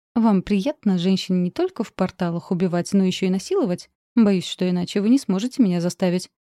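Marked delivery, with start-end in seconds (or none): none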